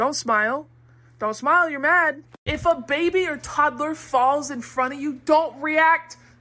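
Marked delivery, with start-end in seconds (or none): 0.0-2.2 dead serious, deadpan, no trace of fun. Showing how to talk to a screaming kid: straight face. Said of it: "Straight face".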